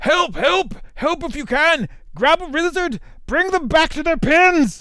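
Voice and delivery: very high, breathless, winded yelling. A narrator voices a dwarf running after loose beasts, breathless yelling. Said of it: "short of breath, and yells to you".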